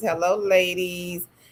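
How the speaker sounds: ordinary talk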